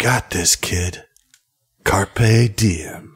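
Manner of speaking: close-up, encouraging stage half-whisper. Narrating a campaign, the speaker voices the abyss leaning in close, half-whispering. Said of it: "It leans in close and it whispers".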